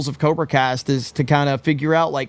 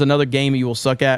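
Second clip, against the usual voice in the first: ordinary talk, nothing marked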